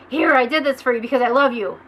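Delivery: aggressive, pushy delivery, said loudly.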